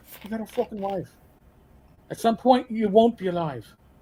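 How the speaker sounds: put-on Irish brogue. Quoting a man urging him to file for compensation, in an Irish brogue. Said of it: "this Irish brogue".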